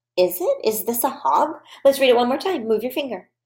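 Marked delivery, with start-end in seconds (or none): 0.2-1.6 questioning tune, pitch rising on "hog". Modeling reading a sentence for a listener following along: question voice. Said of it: "I'm using my question voice".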